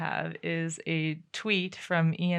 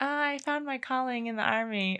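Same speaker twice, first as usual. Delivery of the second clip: put-on small, high, tiny little-girl voice; 8 semitones higher than usual. Discussing army recruiting videos, the speaker imitates tiny little girls: imitating tiny little girls. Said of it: "tiny little girls who are like".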